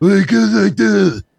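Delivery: put-on drawn-out drawl, rough, creaky, slow and loud. Showing the others an impression of Alec Baldwin doing Trump. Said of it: "that's my Alec Baldwin Trump".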